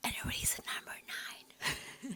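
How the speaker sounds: soft, hushed whisper, barely voiced. Listing reasons in a video while everyone at home keeps quiet, whispering. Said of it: "I don't know why I'm whispering".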